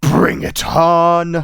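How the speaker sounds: loud, snorting monster yell, stretched on. Narrating a creature that yells at all of you, snorting monster yell. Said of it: "he snorts and he yells at all of you".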